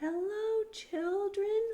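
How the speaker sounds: bright, sugary, sweet voice, high and loud. Reading a story, someone greets the worried children in a sweet voice. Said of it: "someone said in a sweet voice".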